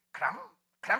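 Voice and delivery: put-on breathy, whispered little baby dinosaur call. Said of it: "크롱이 저기 성대모사하기가 제일 쉬웠어".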